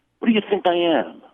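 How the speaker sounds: put-on very high voice, nasty and mean. Retelling an exchange with a host about a long wait, the speaker imitates his nasty tone. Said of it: "In this nasty tone".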